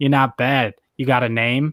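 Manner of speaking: plain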